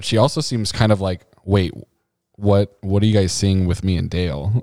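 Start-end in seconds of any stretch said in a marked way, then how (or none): none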